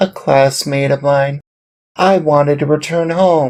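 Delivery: plain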